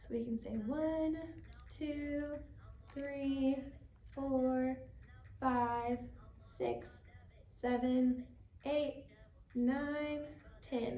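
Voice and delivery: gentle, soft, very slow delivery. Leading a stretch, counting to ten together with the group: soft voice. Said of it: "Maybe we use a little bit of a softer voice".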